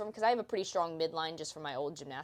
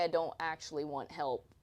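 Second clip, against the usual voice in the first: ordinary talk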